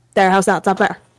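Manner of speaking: natural Irish accent. Dropping a put-on British accent to speak normally: natural Irish accent. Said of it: "let me turn it off".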